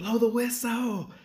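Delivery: mock yell, very high pitched. Retelling a scrimmage when the coach yelled at the officials: imitating Coach Rankin yelling. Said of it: "when Coach Rankin yelled".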